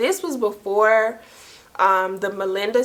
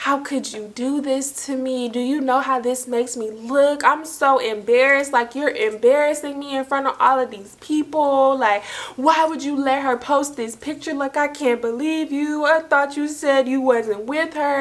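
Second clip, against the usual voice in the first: mock boo-hoo sobbing, gasping and hyperventilating tearfully; 4 semitones higher than usual. Retelling what the crying caller said: imitating someone hyperventilating and crying. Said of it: "hyperventilating, boo-hoo crying".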